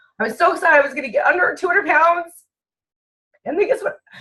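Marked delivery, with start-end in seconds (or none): 0.2-2.3 close to crying partway through the words. Speaker tells listeners about a weight goal, on the verge of tears. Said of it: "I'm so sorry right now because I feel it coming".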